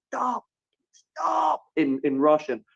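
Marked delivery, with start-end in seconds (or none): 0.1-1.6 mock urgent yell at very high pitch. Recounting a police officer running toward the speaker: imitating someone screaming. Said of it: "someone starts screaming at me".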